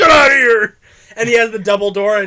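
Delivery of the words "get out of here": high-pitched, loud villain voice. Retelling a cartoon scene, quoting the villain Mandrill: imitating Mandrill. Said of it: "And then Mandrill's like".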